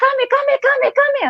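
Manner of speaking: rising excited voice. Demonstrating how to call a dog during play, rising excited tone. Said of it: "see my tone, it's like increasing".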